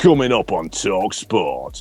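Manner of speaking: deep, back-of-the-throat radio promo announcer voice. Imitating Ralph Ineson doing a radio promo: deep Lancashire voice. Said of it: "it's that real deep".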